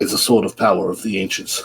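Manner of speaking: deep, epic gladiator voice. During a tabletop game, a player describes a companion's sword: Russell Crowe gladiator voice. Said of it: "it sounded like Russell Crowe doing his gladiator voice".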